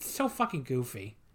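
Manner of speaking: ordinary talk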